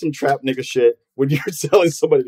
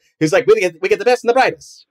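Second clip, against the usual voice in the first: put-on old-timey 1930s voice, much higher pitch; 4 semitones higher than usual. The speaker quotes a 1930s recruiter's pitch in a 1930s impression voice. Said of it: "excuse my 1930s impression voice".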